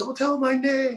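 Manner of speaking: very high shout, stretched out. Retelling shouting back at security from the water: retelling own yell. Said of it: "I was yelling back".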